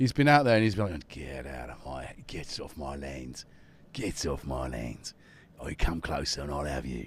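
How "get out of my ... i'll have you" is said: very low, hushed, soft mutter. Voicing a cat that has been threatening Jackson and Tom: Ray Winstone voice. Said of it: "a bit of a Ray Winston in him".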